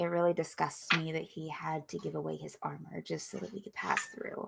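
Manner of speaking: quiet muttering under the breath. Voicing a character speaking to everyone in a cart: under her breath. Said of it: "kind of under her breath".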